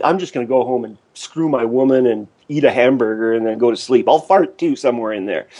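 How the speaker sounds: normal talking voice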